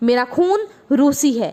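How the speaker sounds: ordinary delivery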